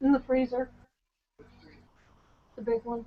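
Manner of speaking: low voice, murmured aside under the breath. Giving instructions to her husband, in a low voice. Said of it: "issuing instructions to my husband in a, a low voice".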